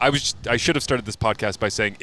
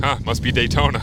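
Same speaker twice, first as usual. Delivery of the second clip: plain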